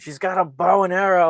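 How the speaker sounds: very loud, shrill scream. Retelling a movie scene where Twig panics after being shot: imitating someone screaming. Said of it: "Twig is screaming".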